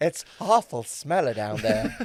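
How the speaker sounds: put-on South Louisiana drag queen voice. Joining in voicing an invented drag queen: Fanny Stank South Louisiana accent. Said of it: "she'd speak like a South Louisiana".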